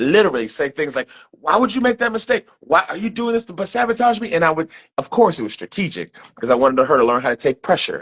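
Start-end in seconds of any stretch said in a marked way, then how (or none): 1.3-4.3 play-acted, high, raised, furious, angry berating rant. Retelling blowing up at someone over a mistake: imitating own past yelling. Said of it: "I would blow off the lid".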